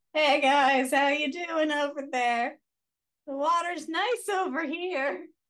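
mock high call carrying across a distance. Standing back in the shallow end, calling to friends in deeper water: acting out shouting across the pool. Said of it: "Just shouting across".

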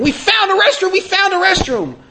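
mock very high-pitched, shrieking scream. Retelling the oldest son running toward them: imitating someone screaming. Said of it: "he's screaming".

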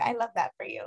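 dry delivery with a sarcastic edge.

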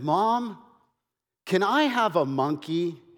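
put-on honest, sincere, earnest, wholehearted delivery. Retelling a child's phone call to his mother: imitating a sincere, honest voice. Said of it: "with all sincerity and honesty in his voice".

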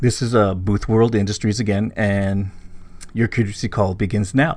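ordinary delivery

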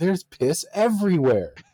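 acted, shrill, very high yelled outburst. Recounting a drinking story and re-enacting what they yelled back then, retelling a yell. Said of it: "I just remember like yelling like".

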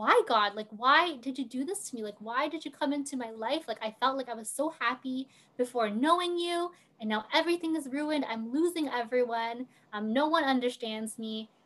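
angry outburst, yelling. Retelling walking up to the crucifix in a church: retelling angry yelling at God. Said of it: "And I started yelling because I was so mad".

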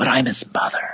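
very quiet, hushed voice. Retelling a heated family argument, quoting a mother's line very quietly. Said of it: "and then very quietly".

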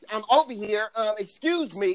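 annoyed and upset tone. Telling someone about a woman whose food was open, imitating an upset woman. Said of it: "And she was upset".

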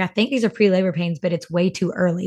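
ordinary delivery

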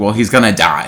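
normal talking voice

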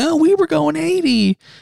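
put-on, very high, mocking, jeering laughing voice. Retelling people laughing at the speaker, imitating mocking laughter. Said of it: "fucking laughing at me saying".

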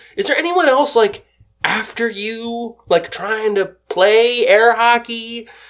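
pinched, nasal-sounding put-on voice, pushed through the nose. Retelling what a woman said when she walked up, nasal imitation of her. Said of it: "a nasally".

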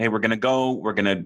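plain

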